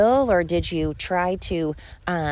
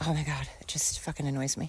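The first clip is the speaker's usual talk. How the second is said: ordinary talk, nothing marked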